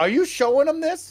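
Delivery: excitable, worked-up, very high-pitched outburst. During a Jeep segment, one speaker pressing another: worked up. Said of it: "Can you calm down?".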